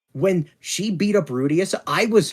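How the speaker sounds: normal talking voice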